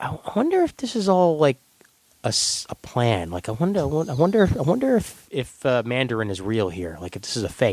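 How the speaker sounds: put-on whispering voice. Retelling a remark made ten minutes into a movie: imitating someone whispering. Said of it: "turns to me and whispers".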